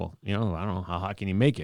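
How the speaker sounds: put-on smug, cocky, self-assured tone. Retelling being asked how hot they want their order, imitating a cocky past self. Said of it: "I'm all cocky".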